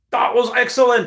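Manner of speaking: put-on Irish accent, pitched very high. Retelling what a man said after the speaker got up, in an Irish accent. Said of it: "in the Irish accent".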